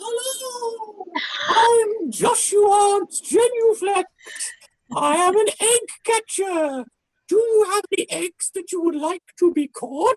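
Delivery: very high, weird, creature-like voice. Voicing an egg catcher who walks up to the players: trilobite-like voice. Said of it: "he says in a voice that is strangely reminiscent of a trilobite".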